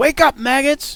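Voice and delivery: very high, loud, commanding yell. Voicing an NPC who walks through the doors: yelling. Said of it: "You hear her ye-, yell".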